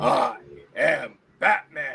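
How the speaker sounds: dramatic superhero voice. Someone good with voices shows it off, doing a Batman voice. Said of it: "Conroy 2.0".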